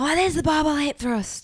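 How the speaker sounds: play-acted very high, loud, carrying yell. Describing what they do to a recording partner when the mic goes on: retelling a shout. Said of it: "I shout at Cal".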